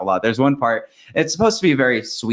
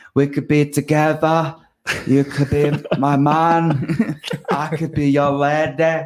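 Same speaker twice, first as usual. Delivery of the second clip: put-on high-pitched, drawn-out Cockney accent, male voice; 5 semitones higher than usual. Describing a character, the speaker quotes her lines: cockney british accent. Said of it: "Cockney British accent".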